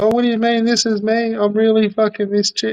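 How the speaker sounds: high, put-on fake girly female voice. Retelling how he answered questions in a fake chick voice: imitating a fake chick voice. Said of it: "a fake chick voice".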